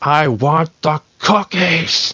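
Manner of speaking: drawn-out, menacing underneath. Retelling a game character after a second wrong item: imitating Amanda freaking out, menacing. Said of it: "the voice has this menacing undertone".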